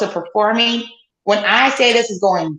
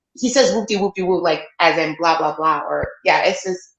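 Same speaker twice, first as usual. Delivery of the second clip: plain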